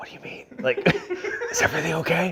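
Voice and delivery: hushed, breathy, worried whisper. Retelling answering a phone call while on a hunting stalk: imitating own whisper. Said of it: "I'm, like, whispering".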